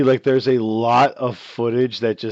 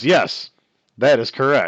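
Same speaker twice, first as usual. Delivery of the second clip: deadpan, flat monotone with no feeling at all; 3 dB louder than usual. Recapping a show scene, imitating Clayton's flat, emotionless reply to her. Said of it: "Just flat, no emotion in his voice".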